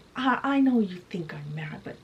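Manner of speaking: plain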